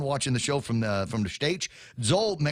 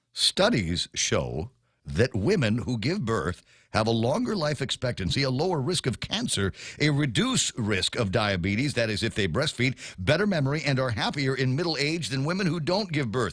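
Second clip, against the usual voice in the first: ordinary talk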